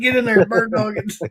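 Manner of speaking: play-acted, high, yelled voice. Describing an episode where a sheriff yells at someone stopping an RV, retelling his yell. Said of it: "he starts yelling at him".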